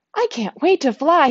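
eager, delighted tone. Narrator reading Harley after his final molt, speaking excitedly. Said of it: "he says excitedly".

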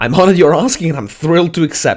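ironic, sarcastic voice. Answering a dangerous job offer with a sarcastic acceptance: sarcastic. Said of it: "That's sarcastic, by the way".

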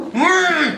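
high, muffled cry, words forced through a gag. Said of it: "you're gonna have to be a bit louder".

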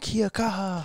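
mock hollered call, high-pitched and shouted. Retelling what the guy standing next to them yelled out: imitating someone yelling. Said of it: "he yelled out".

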